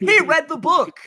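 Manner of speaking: shrill, very high, loud screeching scream. Playing a character at the table, screaming in character. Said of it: "I'm screaming".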